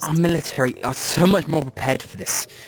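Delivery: slimy-sounding delivery. A voice heard as a man stops before knocking on a door, slimy voice. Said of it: "this kind of slimy voice".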